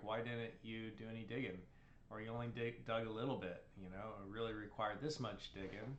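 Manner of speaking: ordinary delivery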